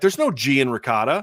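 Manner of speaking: plain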